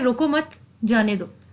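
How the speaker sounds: मत stressed with a falling tune.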